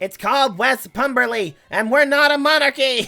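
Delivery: small, tiny, high-pitched yelling voice. As a tiny voice from the city, shout up at the listener: tiny shouting voice. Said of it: "A tiny voice from the city shouts up at you".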